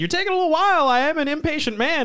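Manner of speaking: loud acted yell. Retelling two characters yelling back and forth: imitating characters yelling.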